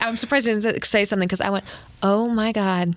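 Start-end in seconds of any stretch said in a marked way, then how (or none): 2.0-3.0 disbelieving exclamation, said privately to oneself. Recounting your own reaction when he did not notice, said under your breath. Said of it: "Like under my breath".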